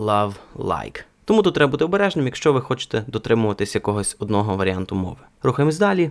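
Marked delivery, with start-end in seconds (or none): 0.0-1.0 American L in "love" and "like". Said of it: "Американець би сказав".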